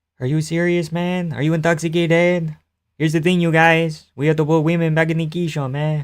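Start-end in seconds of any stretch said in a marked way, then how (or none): 3.0-6.1 quieter, put-on French-Canadian accent. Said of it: "say it in G S P voice".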